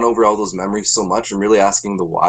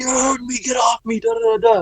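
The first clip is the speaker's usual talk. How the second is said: shrill, very high, struggling scream; 3 dB quieter than usual. Retelling how a restrained kid screamed while still fighting: imitating a kid screaming. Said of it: "the kid's still fighting and screaming, like".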